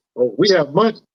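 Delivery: ordinary delivery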